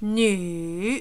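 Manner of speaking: nu dipping down, then climbing. Teaching the Chinese word for woman and its tone; dipping then rising tone on nu. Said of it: "down and up".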